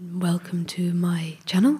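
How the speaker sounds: ominous, menacing, low, sinister voice. Imitating how the other person greets their channel viewers, sinister lowered voice. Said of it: "Why have you lowered your voice in that sinister way?".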